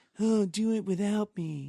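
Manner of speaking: high, whiny, dismissive voice. Describing a character who says the same thing every scene, imitating a whiny line delivery. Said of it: "every single line he delivers is very whiny and dry".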